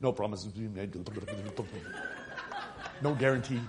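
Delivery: rapid-fire, hurried, rattled-off patter. Acting out what they'll say at the end, rattled off very fast. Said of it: "they'll say really fast".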